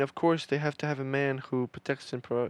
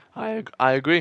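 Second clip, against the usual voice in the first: loud voice breaking and cracking mid-word; 3 semitones higher, 7 dB louder than usual. Agreeing during a group conversation, voice cracking. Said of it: "Oh fucking voice crack".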